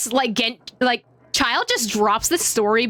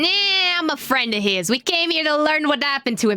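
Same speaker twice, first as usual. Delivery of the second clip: put-on New York accent; 4 semitones higher than usual. Playing a friend who came to learn what happened to him, New York accent. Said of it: "Don't ask me why I went to New York accent".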